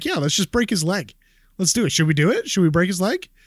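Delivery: put-on offhand, breezy, nonchalant casual tone. Acting out what a man said before he went up, mock-nonchalant. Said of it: "And just like so nonchalantly".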